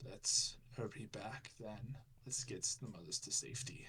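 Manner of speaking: soft, torn-up, beaten, defeated resignation. Speaker voices a defeated Gorath in a game scene, in a very torn voice. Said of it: "in a very torn voice".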